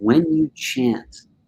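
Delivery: soft, very low, hushed leaned-in murmur. Retelling what a man leaned in and told the group, said very low. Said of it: "he said it very low".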